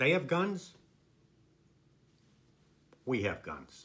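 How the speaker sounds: low, tranquil, serene, unbothered, unhurried calm. Retelling a scene, quoting the young Don Corleone in a low, tranquil voice. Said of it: "in a nice, low, tranquil voice says".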